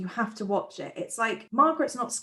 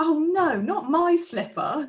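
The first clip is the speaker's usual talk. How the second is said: high, loud, cried-out fake dismay. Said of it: "Janet's like".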